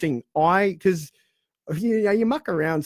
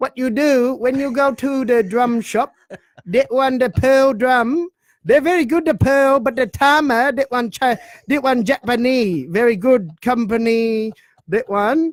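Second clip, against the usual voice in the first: loud, high, put-on Chinese accent with broken English; 6 semitones higher, 5 dB louder than usual. Asked by the other speaker to do it with an accent; put-on accent. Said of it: "talking drums with an accent".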